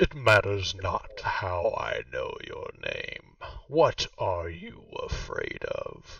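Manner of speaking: deep, swooping, all-surrounding disembodied voice. Voicing an unseen presence asking a player's character his fear: deep voice. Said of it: "The voice says".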